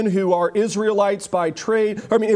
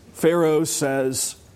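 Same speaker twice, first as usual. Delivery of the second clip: ordinary talk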